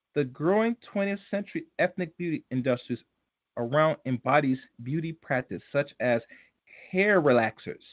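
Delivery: very slow, drawn-out, deliberate word-by-word reading. Rereading a quoted passage aloud for listeners, reading very slowly. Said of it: "Very slowly".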